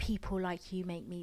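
ordinary delivery

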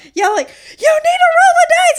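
very loud, high, insistent yelling. Describing family dice games, imitate your mother-in-law yelling at your father-in-law. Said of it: "my mother-in-law will start yelling".

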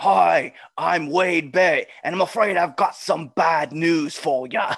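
slow, deliberate ring announcer voice, each word savored. Recalling a favorite moment, doing a Wade Barrett impression. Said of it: "My favorite thing about Wade was when he was just like".

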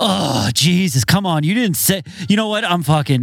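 irritable complaining tone. Retelling how a man at the station reacted to waiting, imitating a grumpy complaint. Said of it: "he was always grumpy about something".

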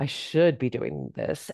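heavy inflection weighed down by dread. Showing the inflection of saying one should be doing this, with a feeling of dread. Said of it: "if you hear the inflection in my voice, whenever I say that, there's like a feeling of dread".

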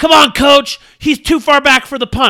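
very high, very loud, shrill, furious hollering. Retelling how a fan behind him yelled at the coach: imitating an angry fan yelling. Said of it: "he was yelling like he was in the freaking Super Bowl".

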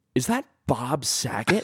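slow, drawn-out, blurted words. Retelling an audience member blurting out a question at a show, retelling a loud blurt. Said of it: "like really loud for everyone to hear".

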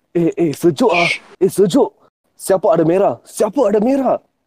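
possessed, unhuman, taken-over voice. Retelling what a shivering man pulled from the water said, in a possessed voice. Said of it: "He's saying it like in a possessed voice".

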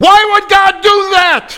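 upset, very high, very loud shrieking scream. Retelling a caller's upset phone call: imitating someone screaming. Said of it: "He starts screaming".

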